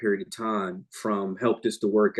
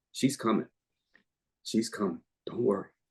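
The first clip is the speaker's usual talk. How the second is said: emotional and moved, quieter and faster; 5 dB quieter than usual. A speaker recalls an employee's prophetic words from 25 years ago, emotional. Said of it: "it makes me emotional to this day".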